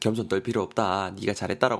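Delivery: ordinary talk, nothing marked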